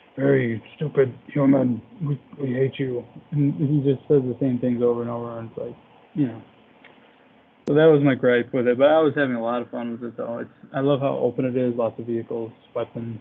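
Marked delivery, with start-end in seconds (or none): 0.2-3.1 slow, growly, snarling bad-guy villain voice. Complaining about a game's bad guy, imitating his lines: growling villain voice. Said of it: "he's just growling the whole time".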